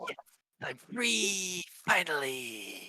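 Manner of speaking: high, slow rejoicing goblin voice. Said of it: "And the other one".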